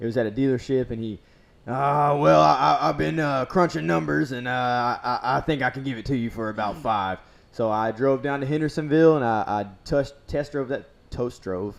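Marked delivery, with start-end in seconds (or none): 1.7-7.2 put-on cranky, grumpy old man voice, hemming and hawing, halting. Retelling a call back from the seller: imitating a grumpy old man voice. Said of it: "grumpy old man voice".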